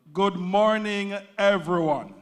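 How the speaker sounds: really lively, booming, very loud voice. Speaker rehearses welcoming everyone to a CEO press event: really lively. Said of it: "if I get really lively".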